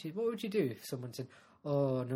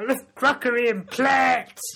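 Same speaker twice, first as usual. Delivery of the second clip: put-on, very high, shrill, booming comedy character voice; 11 semitones higher, 13 dB louder than usual. Introducing a new made-up character to the other speaker: put-on comedy character voice. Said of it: "I like this character".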